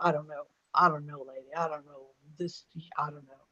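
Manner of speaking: put-on very serious New York accent, low and soft. Retelling a woman leaving a private consultation: serious New Yorker impression. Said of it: "a New Yorker version of".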